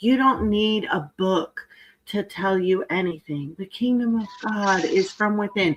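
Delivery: put-on unruffled, serene, calm and soothing voice. Mocking a woman on x who drives the speaker crazy, mocking a calm tone. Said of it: "with that calm ass tone of voice".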